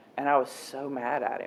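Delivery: ordinary delivery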